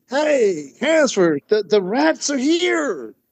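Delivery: put-on excited, eager call, high and swooping. Retelling how people told them the rats arrived: imitating excited announcement. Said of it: "people said to me with excitement".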